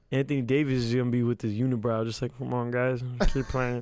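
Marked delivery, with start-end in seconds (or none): 2.3-3.8 put-on flat monotone voice, lower pitch. Imitating Anthony Davis urging teammates on: Anthony Davis monotone impression. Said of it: "has a monotone voice".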